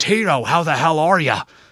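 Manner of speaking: loud, high-pitched, belted-out holler. Retelling the governor greeting Tito Santana: Jesse Ventura impression. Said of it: "Such a good impersonation".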